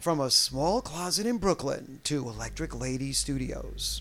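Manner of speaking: grand, full announcer voice. Recounting their recording history, the speaker says this in full announcer voice. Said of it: "I'm going to do this in the full announcer voice".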